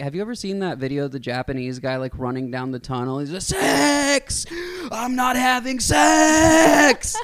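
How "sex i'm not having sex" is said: mock scream, higher and louder. Retelling a video of a man running down a tunnel: imitating someone screaming. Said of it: "screaming in Japanese".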